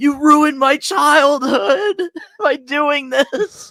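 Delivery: play-acted, high, loud wailing sob through every word. Retelling a fangirl's reaction to a wrestler's debut: imitating someone crying. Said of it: "crying and saying".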